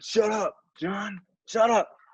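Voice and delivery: high-pitched, yelled "shut up". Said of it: "he'd be like".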